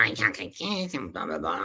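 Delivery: silly, cartoonish, soft, swooping put-on voice. Showing one of the funny voices he thought up, in a funny voice. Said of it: "I thought of all these funny voices".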